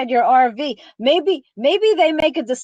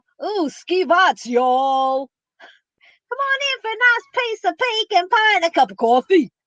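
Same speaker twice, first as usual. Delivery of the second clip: Southern accent crossed with New York accent; 6 semitones higher than usual. Describing a video imagining how a Brooklyn granddaughter would sound down south: Southern-meets-New-York accent. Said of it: "Southern meets New York".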